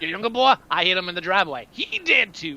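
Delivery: gravelly, rasping villain voice. Acting out a movie scene, threatening a father: gravelly Slappy voice. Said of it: "the guy with the gravelly voice".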